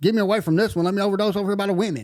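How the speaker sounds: mock very high, frantic, desperate shriek. Retelling own overdose in jail: imitating past self screaming. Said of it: "screaming and yelling".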